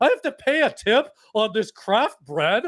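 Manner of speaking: bad, very high put-on voice, badly done. Acting out a person who bought artisanal bread, in a bad Jerry voice. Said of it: "that was the bad Jerry voice".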